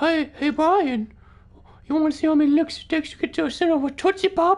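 shrill, creepy character voice, pitched way up. While playing Call of Duty, the speaker does a Herbert the Pervert impression. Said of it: "That's my impression of Herbert the Pervert".

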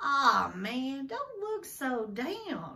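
cheerful, bright, swooping and very slow. TJ tries to lift Stacy's spirits on the way to school: cheerfully. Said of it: "TJ said cheerfully".

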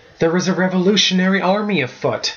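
high, gasped-out words. Hudson answers the narrator's question about recent events: gasped. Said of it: "he gasped".

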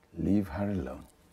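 low, soft, paternal fatherly tone. Father warning his son in a dispute over a woman, fatherly tone. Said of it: "I want to say this in a fatherly tone".

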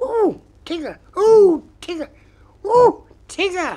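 excited squeak, very high, loud and slow. As Tigger offers to climb trees, Roo squeaks excitedly. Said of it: "Squeaked Roo excitedly".

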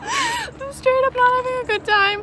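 high, loud, panicked rush of words.

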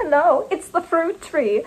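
put-on slow, high-pitched German-accented character voice. Holding a lemon like a phone, answering as the fruit tree, german accent. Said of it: "why would it be using a German accent".

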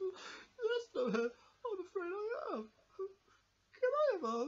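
very high, very slow, drawn-out crying through words. Voicing Mousy, upset that the show is ending: crying while talking. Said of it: "Are you crying?".

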